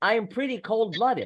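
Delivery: certain, flat, matter-of-fact delivery with no doubt. Contrasting with the question version, the line said with certainty. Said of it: "we have more certainty in our voice here".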